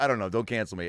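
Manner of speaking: ordinary delivery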